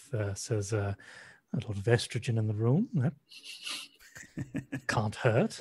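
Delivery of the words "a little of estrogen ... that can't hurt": mumbled, spoken low. Voicing a character remarking on the med bay staff: quietly under her breath. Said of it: "just kind of quietly under her breath".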